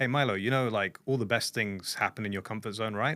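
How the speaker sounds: ordinary delivery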